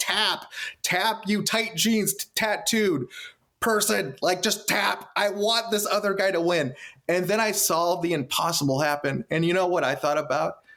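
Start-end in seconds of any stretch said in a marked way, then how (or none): 0.0-6.7 urgent, high-pitched pleading cheer. Retelling watching a wrestling match, yelling at the screen: retelling own screaming plea. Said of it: "I'm screaming for Daniel Bryan and begging Dave Bautista".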